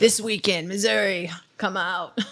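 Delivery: booming, loud motorsport announcer voice. Doing the hyped announcer voice for a crash clip: Supercross announcer voice. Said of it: "the Supercross God voice".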